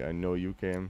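ordinary delivery, nothing marked

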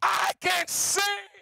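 sudden, loud, high-pitched shouted exclamation. A speaker retells what a woman from Cote d'Ivoire suddenly said, retelling a shout. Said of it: "When she shouted".

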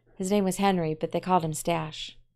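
plain

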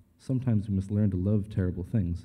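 plain

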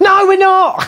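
shouted, very high-pitched outburst. Teaching soldering, answering own question: shouting. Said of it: "Sorry, I keep shouting".

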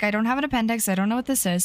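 ordinary talk, nothing marked

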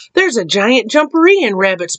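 ordinary delivery, nothing marked

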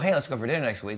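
ordinary talk

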